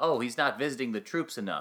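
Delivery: plain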